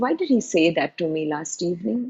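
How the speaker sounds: ordinary talk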